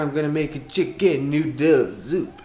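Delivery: rough, slow put-on French accent. Announcing what's for dinner, in a put-on French accent. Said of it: "That's my French accent".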